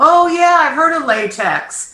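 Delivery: mock knowing aha.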